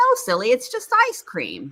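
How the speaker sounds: very high penguin voice, slowing at the end.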